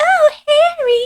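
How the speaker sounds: very high, shrill, loud squealing ghost voice. Explaining who Moaning Myrtle is from Harry Potter: Moaning Myrtle voice. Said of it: "a ghost that kind of flies through one of the bathrooms and is always like".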